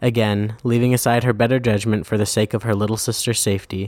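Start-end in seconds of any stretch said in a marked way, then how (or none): none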